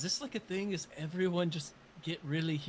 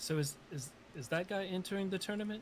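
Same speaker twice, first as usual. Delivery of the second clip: usual speaking voice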